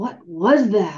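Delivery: breathless, short of air. Reading Zane as the two boys peer down into the gully, asked breathlessly. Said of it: "Zane asked breathlessly".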